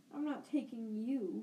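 snarling voice. Narrator reads an uncle turning to see someone watching him, snarling. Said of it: "he snarled".

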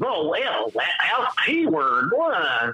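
slow, halting, stumbling delivery full of fillers. Imitating how Ben Shapiro sounds on a podcast: Ben Shapiro impression. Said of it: "he actually talks like that".

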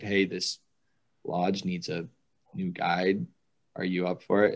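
ordinary delivery

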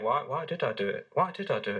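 very soft, quiet, hushed voice. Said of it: "It's a very soft voice".

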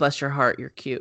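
ordinary delivery

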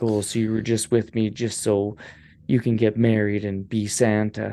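ordinary talk, nothing marked

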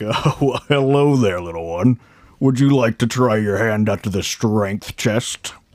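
big, hulking, burly strongman voice. Narrator voices a big, burly man holding a huge hammer; burly strongman character voice. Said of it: "And he just kind of goes".

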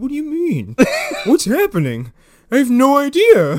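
very high, loud voice sounding totally baffled. Imitating Haggerty, who sounds constantly perplexed: perplexed Haggerty voice. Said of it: "constantly just perplexed".

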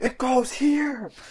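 very high, shrill, full-out screaming. Retelling a contestant at the block puzzle challenge: imitating Kellen yelling. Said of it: "She was just yelling, like".

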